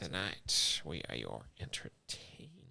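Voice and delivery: put-on comic-book supervillain voice. Taking up a challenge to talk as the Joker: Heath Ledger Joker voice. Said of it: "talk as Heath Ledger Joker".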